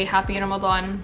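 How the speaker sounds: plain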